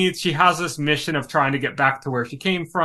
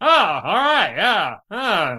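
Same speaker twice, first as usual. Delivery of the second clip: very slow, nasal, pitched-up drawl; 5 semitones higher than usual. Describing Chris Hemsworth's character attempting a big speech: nasal Chris Hemsworth impression.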